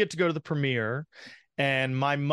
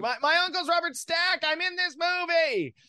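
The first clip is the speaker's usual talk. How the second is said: play-acted, very high-pitched, strained half-shout. Retelling meeting a film star at a premiere: imitating own past yell. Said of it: "and so then I kinda yelled".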